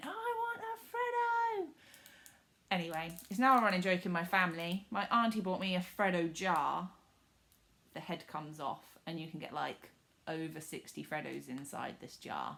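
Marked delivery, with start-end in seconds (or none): 0.0-1.7 put-on play-acted shrieking toddler, very high and slow. Retelling their own toddler meltdown in a shop, imitating a screaming toddler. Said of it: "I was there literally screaming".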